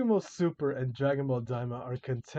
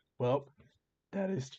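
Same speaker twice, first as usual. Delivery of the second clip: voice cracking, quieter; 3 dB quieter than usual. Reading out critical points and responding to them, voice cracking. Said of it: "ah voice crack".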